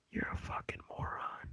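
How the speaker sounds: soft, unvoiced whisper. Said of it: "I'm whispering this".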